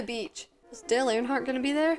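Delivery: plain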